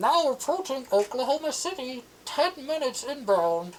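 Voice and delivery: automated intercom announcer voice. Narrating a game scene, giving the announcement over the intercom in a robotic intercom voice. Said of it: "a robotic autonomous voice over the intercom".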